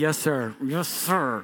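very slow, spoken through gritted teeth. Retelling answering a father after being told to apologize: retelling a reply through gritted teeth. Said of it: "Through gritted teeth".

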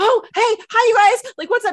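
frantic, very high-pitched and loud. Describing Tom Holland's Spider-Man impression, do a frantic Peter Parker impression. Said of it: "He's like kind of frantic".

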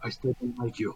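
whispering. Walking in arm in arm with a companion, pretending to be drunk: whispering. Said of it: "All the time I'm whispering".

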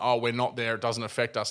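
ordinary delivery

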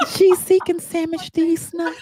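mock-sweet feminine tone. Redoing the line after being told it wasn't feminine, mock-sweet feminine tone. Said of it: "Was that nice enough".

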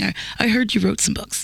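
mock patronizing, condescending voice. Retelling a man's words to a writer at a party: imitating a condescending tone. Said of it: "very condescending".

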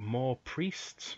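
halting broken English. Narrator voicing a leader who looks over the group: attempted broken english. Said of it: "I can't convey broken very well".

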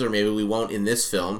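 usual speaking voice

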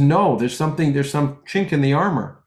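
ordinary talk, nothing marked

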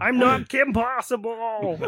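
very high, loud, squealing character voice. Showing the others an impression of Andrea Romano. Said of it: "You wanna hear my impression of Andrea Romano?".

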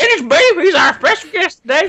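put-on Southern accent. Introducing the special guest on the podcast: put-on Southern accent. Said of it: "you went full South there".

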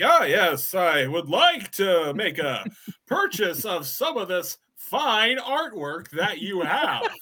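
loud, slow, booming salesman voice. Acting out a character coming through the front door to buy artwork, loud salesman voice. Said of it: "you had like a loud sales guy voice".

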